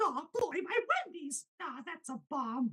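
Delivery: squeaked out, way up high. Retelling a guy's impression of Mickey Mouse when Wendy's gets his order wrong: Mickey Mouse impression. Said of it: "this is my impression of Mickey Mouse".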